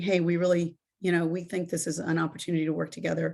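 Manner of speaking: ordinary talk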